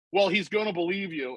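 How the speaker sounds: plain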